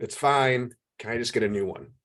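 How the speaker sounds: put-on very quiet voice. Retelling how a customer with a hair in the food spoke: imitating someone speaking very quietly. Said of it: "very quietly said".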